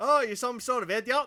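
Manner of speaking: put-on English accent. Asked to call someone an idiot in an English accent, English accent impression. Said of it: "That's my best English impression".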